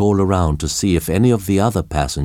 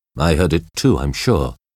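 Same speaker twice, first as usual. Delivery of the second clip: ordinary delivery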